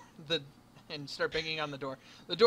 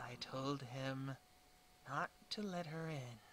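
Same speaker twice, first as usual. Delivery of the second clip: slow, soft grumble under the breath. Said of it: "Under his breath".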